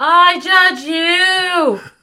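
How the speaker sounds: loud high trumpet-like yell, drawn-out you. Imagining a trumpet that yells, voicing what it goes: pretend yell. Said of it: "just a trumpet that I yell".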